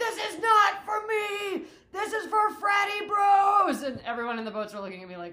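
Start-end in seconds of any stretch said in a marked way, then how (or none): 0.0-3.8 shrill, very loud, long drawn-out yelling. Speaker retelling a meltdown while steering a boat: retelling yelling. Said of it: "I was yelling".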